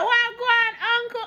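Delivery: Jamaican patois, very high pitch, unhurried pace. Retelling greeting older neighbours in Jamaica, in Jamaican patois. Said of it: "Like I was chatting patois".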